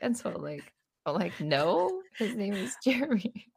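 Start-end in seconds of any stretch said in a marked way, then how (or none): 1.4-3.3 acted-out stifled laughter, pitched up. Retelling their own line to a woman, reenacting holding back laughter. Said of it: "trying not to freaking die laughing at this point".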